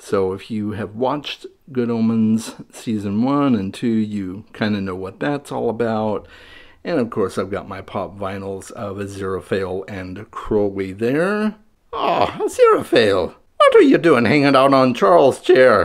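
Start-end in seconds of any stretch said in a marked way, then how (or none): 11.9-15.9 bad put-on demon voice, higher and louder. Voicing a pop vinyl figure on a shelf: bad Crowley voice. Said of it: "bad voices".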